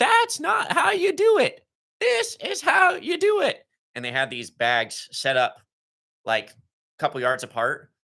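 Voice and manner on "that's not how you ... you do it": put-on very high-pitched, slow, drawn-out coach yell. Retelling how the linebackers coach yelled at a drill: imitating Grims yelling. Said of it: "So he's yelling".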